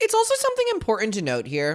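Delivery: voice jumps up unbidden, high and swooping. Starting to make a point in a discussion: voice went high. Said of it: "I don't know why my voice went so high".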